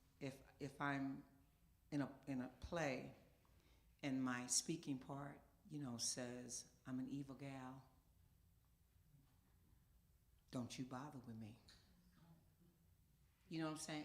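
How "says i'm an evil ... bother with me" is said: words spaced out with a dramatic pause mid-line. Acting a speaking part in a play: deliberate pause for emphasis. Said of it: "you see how I gave that that space to give the emphasis".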